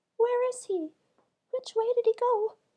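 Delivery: dainty little fairy voice, very high and loud. A storyteller reads out a fairy's question in the story; dainty little fairy voice. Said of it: "Standing in the bucket was a dainty little fairy, / she asked the astonished [name]. / or I shall never be able to get the queen's pearl."".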